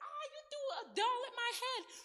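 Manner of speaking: put-on shrill, high, loud upset kid's outburst. Explaining how to handle two kids in a conflict, imitating an upset child. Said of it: "so now they're upset".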